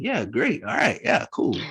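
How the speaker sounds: high-pitched swooping delivery. Retelling how a guest agreed to join the show: imitating Renasia. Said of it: "this is the voice that she said it in".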